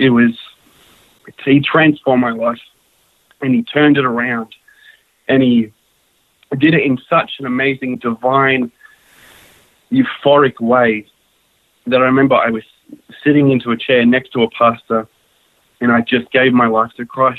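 choked-up voice catching and breaking mid-phrase, halting. Sharing a personal faith testimony: choked up. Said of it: "I'm getting a bit choked up".

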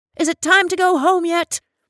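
very high, sharp, loud snapping tone. A normally docile resident, restless among the others, snaps. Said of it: "snapped the normally docile Mrs. Young, her face turning sulky".

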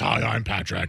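voice roughed up with fake scruff. Showing how people mimic the other speaker: imitating Patrick's scruffy voice. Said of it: "you're just talking like this".

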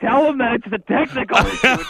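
shrill high-pitched yelling. Speaker retelling what they yelled when the other person opened the show. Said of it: "I'm yelling like".

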